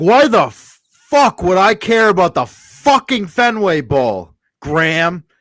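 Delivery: very loud, high, furious angry rant. Retelling a coach's outburst at a reporter: imitating an angry outburst. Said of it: "he's like".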